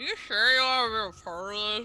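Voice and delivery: speaking while chewing, through a mouthful. A character holds up a drawing to show Jan and the paladin, talking with a mouthful of pancakes. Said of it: "with a mouthful of pancakes".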